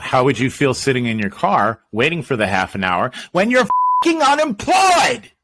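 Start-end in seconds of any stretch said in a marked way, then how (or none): 3.3-5.2 worked-up heated rant, swooping, rising pitch. Speaker argues with another person, yelling, fired up. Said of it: "I don't know why you have to yell at me".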